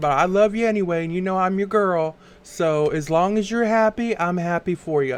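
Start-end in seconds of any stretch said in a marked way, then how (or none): none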